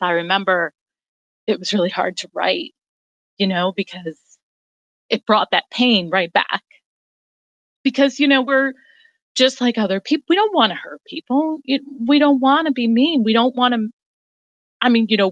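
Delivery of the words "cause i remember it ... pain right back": emotional voice, choked up and catching. A guest hearing their own hard-to-write passage read aloud, getting choked up. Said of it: "I'm getting choked up now".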